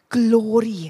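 glory said with a proper Welsh accent. Listing four themes, saying the last word in a welsh accent. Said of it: "I can't say it without, like, a proper Welsh accent".

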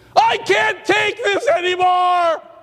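very high, drawn-out furious scream. Acting out an imagined God losing patience: imagined God screaming. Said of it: "God screams across the universe".

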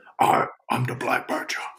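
put-on growly character voice. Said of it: "Answering in a growly voice".

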